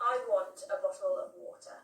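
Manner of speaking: standard British Received Pronunciation accent. Demonstrating one sentence in different British accents, in an RP accent. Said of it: "how uh, it's said in R P".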